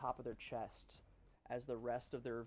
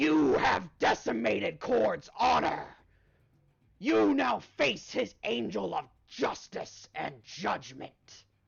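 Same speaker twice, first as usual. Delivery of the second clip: very loud, raspy, garbled, angry rage; 9 semitones higher, 18 dB louder than usual. Describing a voice you don't expect, a raspy, garbled, mock-angry voice. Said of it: "in a voice you don't expect, raspy, garbled, angry".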